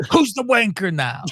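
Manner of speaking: yelling. Retelling a line someone yelled during the match: imitating someone yelling. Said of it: "He later yells it too".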